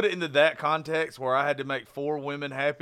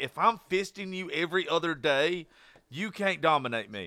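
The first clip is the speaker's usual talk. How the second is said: ordinary delivery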